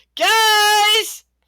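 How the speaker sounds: shouting. Voicing a character calling the group from below deck: yelling from below deck. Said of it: "Pink yelling from below deck saying".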